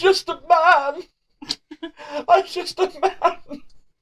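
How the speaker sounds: very high, slow, whimpering sniveling voice. Voicing a kneeling man begging for mercy: sniveling plea. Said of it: "Pathetic sniveling runt".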